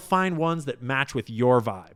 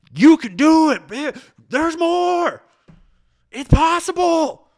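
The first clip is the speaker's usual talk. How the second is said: very loud, very high, booming preacher-style screaming; 9 dB louder than usual. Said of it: "screaming at you like".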